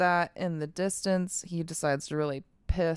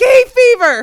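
shrill, very high and loud blurted shout; 22 dB louder than usual. Retelling a movie scene where Derry yells out a license plate: imitating Derry yelling. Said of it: "Fucking Derry yells out".

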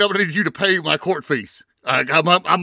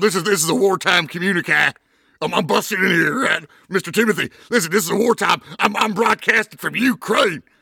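put-on ranting radio host voice. Busting in on the show pretending to broadcast from Ukraine: Alex Jones voice. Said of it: "You got Alex Jones here".

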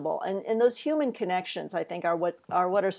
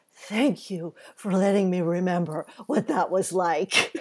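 mock whispering. Retelling what an older reader said after a reading: imitating someone whispering. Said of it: "she whispered in my ear".

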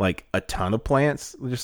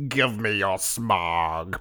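very slow villain drawl, smog drawn out long; 3 semitones lower than usual. Joking about a movie villain, doing an impression of Tim Curry. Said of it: "That's my second impression".

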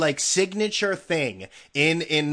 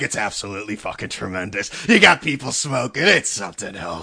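gushing with absolute glee, delighted; 6 semitones lower than usual. Mimicking the other person's gleeful description back at them, mimicking someone's glee. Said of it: "you're like".

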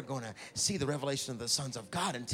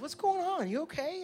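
New Jersey accent, pitched way up. Speaker echoing a Bible verse's question back at the listeners, New Jersey-ish accent. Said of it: "It sounds very New Jersey-ish".

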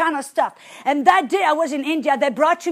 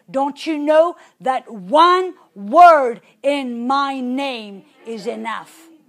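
mock stern, strong, forceful, slow voice; 2 semitones lower than usual. Recounting the Holy Ghost's answer to the speaker's prayer, retelling a stern, strong voice. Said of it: "in a really kind of stern, kind of strong voice".

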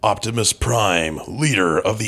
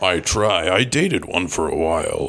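put-on robot character voice, lower pitch; 3 semitones lower than usual. Answering a question about an email, in character: Optimus Prime voice. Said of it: "Optimus Prime".

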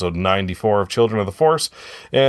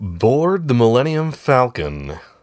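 put-on advertiser announcer voice, pitched up; 5 semitones higher than usual. Reading a synopsis aloud: advertiser voice. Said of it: "I'll read it in advertiser voice".

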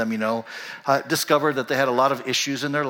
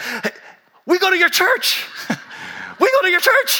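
very high, loud, thrilled, eager gush, acted out; 5 dB louder than usual. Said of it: "real excited".

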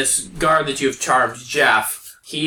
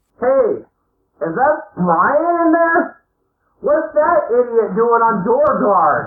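muffled as if behind a wall, pitched up; 8 semitones higher, 4 dB louder than usual. Acting out a voice calling through from the other side of a wall, muffled. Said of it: "a muffled voice comes through and goes".

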